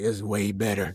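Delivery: put-on gruff soldier voice. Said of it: "Let me get my Snake voice in there".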